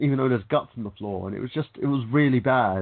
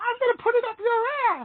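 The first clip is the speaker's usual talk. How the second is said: very high-pitched puppet voice. Retelling what someone said in a video: Elmo voice. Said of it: "in the, the Elmo voice".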